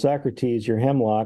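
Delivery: ordinary talk, nothing marked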